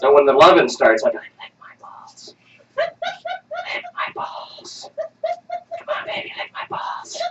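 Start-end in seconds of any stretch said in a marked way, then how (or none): 1.2-7.2 very slow, hushed, breathy whisper. Speaker retelling what he said in bed to his partner, retold whisper. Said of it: "Liam, why are you whispering?".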